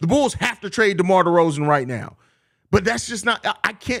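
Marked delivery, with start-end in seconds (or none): none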